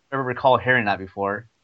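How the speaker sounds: usual speaking voice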